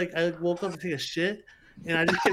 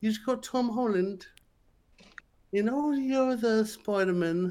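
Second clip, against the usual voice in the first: put-on young British voice, higher pitch; 5 semitones higher than usual. Joking with friends about a Spider-Man casting: Tom Holland impression. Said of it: "That's my Tom Holland impression".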